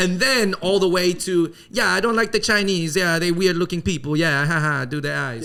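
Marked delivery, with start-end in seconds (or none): 1.7-5.4 clumsy, bad, fake put-on Italian accent. Imitating an athlete mocking chinese people: bad italian accent. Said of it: "my really bad Italian accent".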